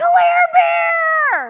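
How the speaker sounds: very loud, very high, delighted joyful shout. Retelling running to a niece in a restaurant: retelling own shout. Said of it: "And I was shouting".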